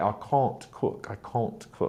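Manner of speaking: near-whispered British accent and pronunciation. Showing how english pronunciation differs between regions, say it as a british person would, in a british accent. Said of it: "Whereas a British person would say".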